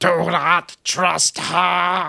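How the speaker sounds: very slow, rough, creaky, high-pitched voice. Acting out a voice from a ringing phone booth, in a Doctor Who voice. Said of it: "in that Doctor Who voice".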